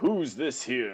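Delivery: put-on slow, drawn-out old master voice.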